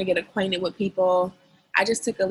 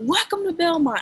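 put-on very high, super-loud, thrilled shriek; 10 semitones higher than usual. Speaker recalling a campus tour where a girl screamed a welcome, retelling a super-loud scream. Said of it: "like super loud".

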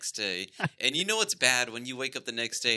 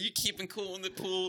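put-on overly nice tone, higher and quieter; 7 semitones higher, 5 dB quieter than usual. Retelling greeting a guest at the pool: imitating own overly nice tone. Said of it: "I'm acting nice".

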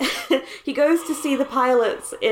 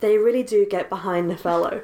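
put-on wistful voice. Speaker retells a movie scene where Vanessa steers the plane, mock-wistful, as Vanessa. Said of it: "she says wistfully".

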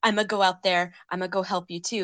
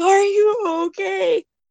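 mock frantic, alarmed, very loud, high, panicked cry; 12 semitones higher, 9 dB louder than usual. Retelling how Yasu freaks out at a fall: imitating Yasu freaking out. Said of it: "And Yasu freaks out".

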